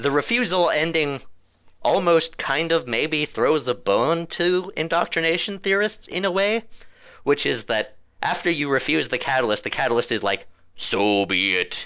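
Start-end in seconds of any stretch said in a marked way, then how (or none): 10.8-11.9 very deep, low, dropped voice. Retelling what the catalyst says after you refuse it: very deep Reaper voice. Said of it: "in a very deep Reaper voice".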